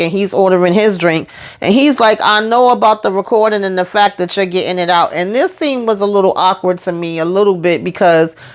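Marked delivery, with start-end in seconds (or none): none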